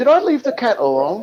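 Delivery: put-on laid-on English accent. Retelling a Little Britain sketch about a piano player: put-on English accent. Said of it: "Sorry about the accent".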